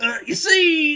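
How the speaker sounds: very high, loud, belted celebrity voice. Announcing an impression mid-conversation, then doing it: Bill Cosby voice. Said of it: "I'm gonna do like a Bill Cosby voice".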